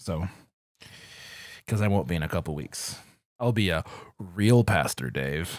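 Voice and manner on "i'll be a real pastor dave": thick, heavy, loud, swooping sarcasm. Joking about soon becoming a real pastor: heavy sarcasm. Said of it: "heavy sarcasm there".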